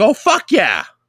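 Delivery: put-on woman's voice. Speaker retells how a woman they hired at work reacted, imitating a woman's voice. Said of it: "But it's in a lady's voice".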